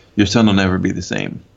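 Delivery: ordinary talk, nothing marked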